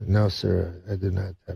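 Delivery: soft-spoken, quiet, with great dignity. Telling a story, quoting a man's answer: imitating a quiet, dignified reply. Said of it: "Quietly, you know, but with great dignity".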